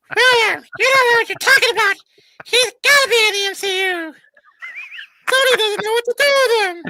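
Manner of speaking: very high, loud, jeering, taunting voice. Quoting critical commenters, the speaker mimics them in a mocking high-pitched voice. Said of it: "my high-pitched voice is the funny one".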